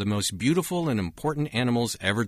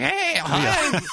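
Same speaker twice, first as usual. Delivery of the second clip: put-on cartoon child voice, very high; 4 dB louder than usual. Imitating how the other speaker sounded after losing his voice: Simpsons kid voice. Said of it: "you sounded like that kid in The Simpsons".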